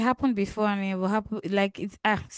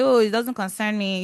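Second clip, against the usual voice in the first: ordinary delivery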